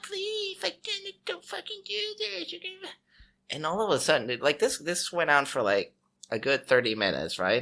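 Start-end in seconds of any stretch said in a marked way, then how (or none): 0.0-2.9 tiny, very high, soft squeaky voice. Retelling what someone kept saying for thirty minutes: squeaky voice. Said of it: "It's like a fucking squeaky ass voice".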